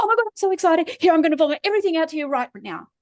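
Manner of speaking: put-on overexcited gushing in a high sing-song voice. Acting out how people write their social media posts, in a mock-excited voice. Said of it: "act this out with the voice".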